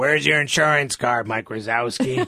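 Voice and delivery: fed-up, grumpy, raspy smoke-worn voice. Speaker imitates a woman calling the next name at the counter: like she just smoked cigarettes. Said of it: "smoked four cigarettes outside".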